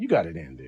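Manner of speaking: put-on, dry, sarcastic tone. Acting out what they would say to a partner after a car ride: imitating a sarcastic remark. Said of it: "sarcastically would be like".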